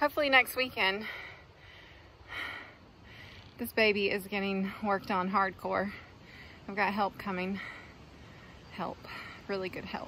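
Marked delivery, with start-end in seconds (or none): 0.0-5.9 winded, breathless, quieter and lower. Telling viewers about next weekend's work, out of breath. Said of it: "I'm out of breath".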